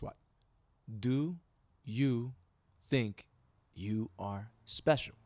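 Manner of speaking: very slow, dragged out, breaking off mid-phrase. Retelling what a lady said at an appointment: imitating someone speaking very slowly. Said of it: "slow as hell, like, just like this".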